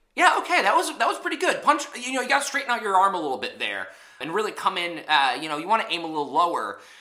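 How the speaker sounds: cheerful, bright, kind put-on voice, pitched way up.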